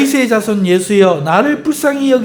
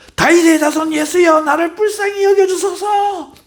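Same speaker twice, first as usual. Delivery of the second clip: play-acted very high, sudden high-pitched crying out; 10 semitones higher than usual. Retelling how a blind man cried out to Jesus: imitating a blind man shouting. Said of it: "이 사람이 갑자기 소리치는 거야".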